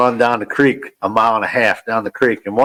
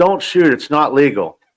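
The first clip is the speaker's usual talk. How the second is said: acted yell, higher; 4 semitones higher than usual. Retelling the dad's call from the next spot: imitating a dad yelling. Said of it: "he yells".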